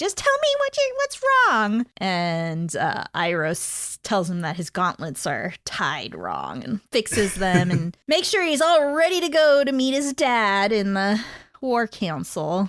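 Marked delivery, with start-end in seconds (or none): 0.0-1.9 put-on whiny teen voice, high, swooping, sing-song. Retelling Zuko's words to Iroh, in a whiny Zuko voice. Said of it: "with his whiny voice".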